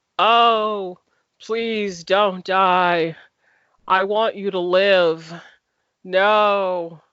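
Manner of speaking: mock deadpan pleading, very slow, no inflection. Describing a scene, the speaker imitates Doctor Aki's flat pleading. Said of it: "That's as much inflection as she as she put into".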